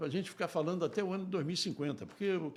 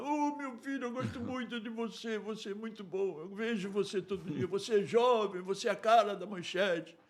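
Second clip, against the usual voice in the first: mock near-tearful voice, pitched higher; 4 semitones higher than usual. Retelling what an old boss said in the corridor: imitating someone almost crying. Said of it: "ele falava chorando, ele fala, quase que chorando".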